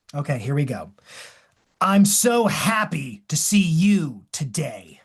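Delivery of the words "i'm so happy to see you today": slow, drawn-out, annoyed, dripping sarcasm. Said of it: "It sounds like you're being sarcastic or maybe a bit annoyed".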